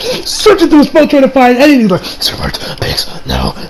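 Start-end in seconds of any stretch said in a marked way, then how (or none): 2.0-3.5 low, soft, frantic muttering. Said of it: "the dude's muttering like crazy".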